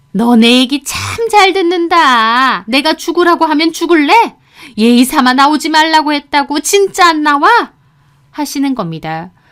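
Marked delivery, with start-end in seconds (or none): 0.2-7.8 high, loud, angry, furious yelling. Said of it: "또 악을 써대는데".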